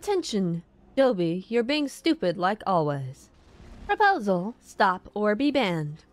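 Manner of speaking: synthetic, mechanical robot-style announcer voice. Reading out a message while playing a game, robot voice. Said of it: "did the whole thing in robot voice".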